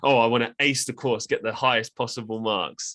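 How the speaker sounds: tongue-in-cheek, sarcastic delivery. Retelling a reply to a teacher's question: retelling own sarcastic remark. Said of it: "I just sarcastically said".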